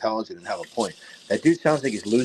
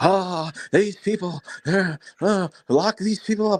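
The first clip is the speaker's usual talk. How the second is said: put-on frantic male voice flipping out, higher; 9 semitones higher than usual. Retelling a clip of Overman during covid: imitating Overman flipping out. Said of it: "flipping out".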